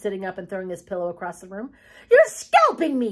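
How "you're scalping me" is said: shrill, very loud, high-pitched hollering yell. Sitting up after his hair is pulled, hollering. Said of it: "he hollered".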